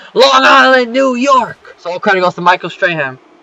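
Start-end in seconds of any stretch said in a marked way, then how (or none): 0.2-1.8 high, drawn-out, big put-on announcer-style shout. Recapping a wrestling show, retelling what a man shouted in the ring. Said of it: "He shouts out".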